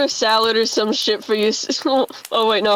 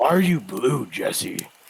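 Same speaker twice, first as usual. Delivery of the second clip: deep, very low character voice; 10 semitones lower, 5 dB quieter than usual. Doing an impression of Walter for the others: imitating Walter. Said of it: "This is Walter".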